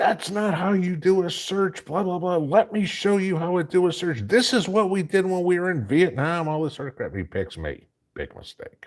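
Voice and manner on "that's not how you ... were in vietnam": very high-pitched, screaming drill-sergeant voice. Retelling a first sergeant scolding his troops: imitating someone screaming. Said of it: "screaming at his troops".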